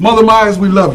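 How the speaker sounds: ordinary talk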